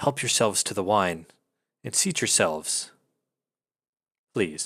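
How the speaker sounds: dry, rasping, parched voice. Voicing a masked figure welcoming guests: dry, raspy voice. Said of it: "dry, raspy voice".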